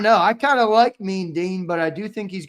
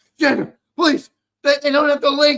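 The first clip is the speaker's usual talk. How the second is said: mock frantic, fretting, high, rushed panic; 7 semitones higher, 5 dB louder than usual. Imitating a friend who panics about a missing link: imitating Sills panicking. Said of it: "He always panics when something happens".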